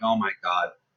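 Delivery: quiet, deep, embarrassed gasp. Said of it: "So, like, mortified".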